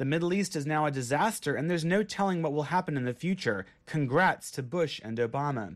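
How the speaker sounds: ordinary talk, nothing marked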